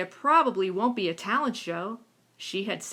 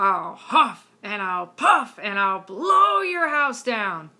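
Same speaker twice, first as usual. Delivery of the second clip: big, deep, loud, menacing storybook growl; 5 dB louder than usual. Reading a story aloud to show character differences, in a deep, loud wolf voice. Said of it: "use a deep, loud voice ... just like I did".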